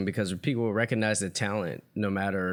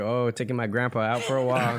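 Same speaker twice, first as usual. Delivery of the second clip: plain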